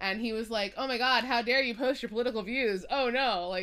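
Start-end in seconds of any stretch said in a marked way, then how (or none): 0.8-3.5 put-on sarcastic delivery. Retelling a celebrity's online comment on a political post: imitating a sarcastic comment. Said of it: "very sarcastic".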